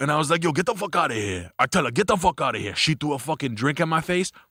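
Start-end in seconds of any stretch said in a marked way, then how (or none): 0.4-2.7 put-on Dominican man voice. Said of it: "He talks like this".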